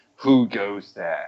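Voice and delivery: thundering, deep, booming low call. A game master voices an unseen figure calling through the tunnel: deep booming voice. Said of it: "a deep booming voice comes from".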